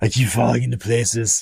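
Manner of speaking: brooding masked vigilante voice. Answering a viewer who wants to hear it, the host does his Batman voice. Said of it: "Everyone loves my Batman voice".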